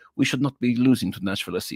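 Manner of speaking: weird put-on Montreal French accent. Voicing club ownership and management, in a weird Montreal French accent. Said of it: "That was my weird uh, Montreal French accent".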